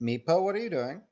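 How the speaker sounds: calm paternal voice. In a tabletop game, a character calls out to another creeping toward a door, paternal voice. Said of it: "in that like paternal voice".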